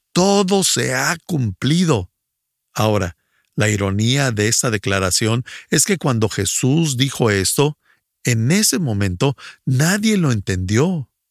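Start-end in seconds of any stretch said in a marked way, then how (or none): 0.1-2.1 high, slow, triumphant shouted cry. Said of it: "gritó".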